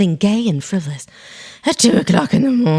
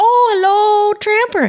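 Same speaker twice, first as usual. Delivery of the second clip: put-on very high-pitched grandma voice; 13 semitones higher than usual. Retelling how a grandmother greeted the family dog, imitating grandmother. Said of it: "she just sounded like".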